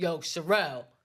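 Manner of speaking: put-on puffed-up, self-important bass voice. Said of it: "puffs up there".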